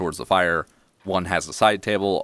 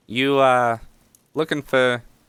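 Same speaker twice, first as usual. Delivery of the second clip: put-on New Jersey accent, pitched up high; 7 semitones higher, 4 dB louder than usual. Narrating a game, voicing the oldest halfling child speaking to you: jersey accent. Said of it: "give him a Jersey accent".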